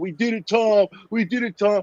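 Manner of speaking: high-pitched, put-on blubbering through tears. Mocking how someone cried and spoke in an interview: imitating someone crying. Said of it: "start crying and saying".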